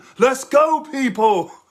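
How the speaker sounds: high, loud, shouted hype-man voice.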